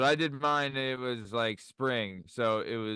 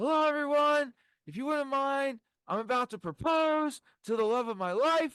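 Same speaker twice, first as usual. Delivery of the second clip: mock, very high, carrying yell. Retelling announcing a proposal to everyone in a garden: retelling a yell. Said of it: "put my hand up and I yelled".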